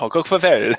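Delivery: put-on Norwegian accent. A speaker says goodbye and farewell, in mock Norwegian. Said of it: "in my finest Norwegian".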